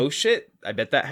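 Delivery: ordinary talk, nothing marked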